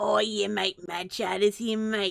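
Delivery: throat-straining, strained put-on voice. Welcoming Sheridan, the speaker switches to a throat-straining put-on voice. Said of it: "that voice is going to kill my throat".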